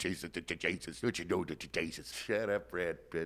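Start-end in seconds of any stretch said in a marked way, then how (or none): 0.0-2.1 bad put-on Irish accent, lower and quieter. Mocking a film role from Snatch: imitating Brad Pitt's bad Irish accent. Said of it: "he was trying an accent".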